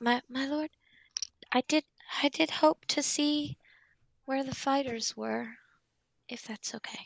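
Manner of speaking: whispering in an acted character voice. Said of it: "I lean up and I whisper in Dax's ear".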